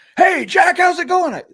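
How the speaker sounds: huge booming bellow, very loud and high. Retell the man greeting you outside in the early morning, in Mister Graham's big booming voice. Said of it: "he had this big booming voice".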